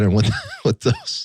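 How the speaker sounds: high-pitched, giggly, cracking up with laughter. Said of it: "sorry, I'm cracking up".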